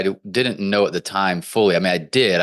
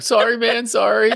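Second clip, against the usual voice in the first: mock high voice on the edge of tears. Retelling forcing hydrogen peroxide down his throat to make him throw up: imitating almost crying. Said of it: "almost crying".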